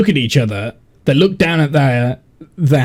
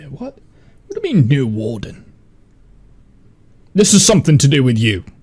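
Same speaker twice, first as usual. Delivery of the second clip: aggressive, hostile character voice. Voicing angry characters who turn on a player: aggressive in-character voice. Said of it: "all of a sudden the aggression is back".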